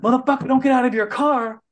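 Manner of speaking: high, play-acted, furious, angry yell. Retelling a woman yelling at the speaker over a parking spot, imitating a woman yelling. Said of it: "So she starts yelling".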